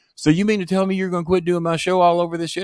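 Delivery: put-on, shrill, very high-pitched yell. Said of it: "it gets into a loud screaming match".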